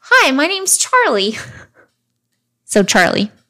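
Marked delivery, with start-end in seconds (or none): 0.1-1.3 very high, slow voice as through a speaker. Retelling what a head in a creepy cartoon said, in a high-pitched speaker-like voice. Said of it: "in a high-pitched voice".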